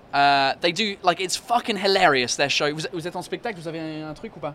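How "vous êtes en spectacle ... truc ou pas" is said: very hushed, quiet French, rattled off rapidly. Speaker asks the drumming duo about their show in French, very fast. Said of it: "You speak very fast".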